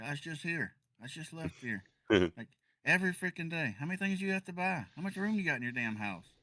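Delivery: mock very high yelling rant. Retelling a delivery driver caught on camera, imitating his yelling. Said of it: "with the the driver like yelling".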